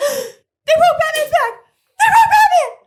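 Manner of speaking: shrill shriek, very high and loud. Recounting a friend's outburst in a silent theater, imitating a shrill scream. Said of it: "screamed bloody murder like a little girl".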